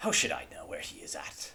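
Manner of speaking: wet, vibrating, argumentative gurgling voice. A creature in a vat answers a question about the enchanter, gurgling voice. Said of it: "speaks in kind of a gurgled uh, voice".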